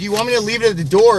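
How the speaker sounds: put-on high-pitched yell. Recounting yelling through a door to someone who wasn't answering, retelling a yell. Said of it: "I yell through it and I said".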